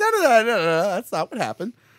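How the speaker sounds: a little mad. Imagining own reply to being called a failed priest: imitating an annoyed denial. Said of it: "I'd be like".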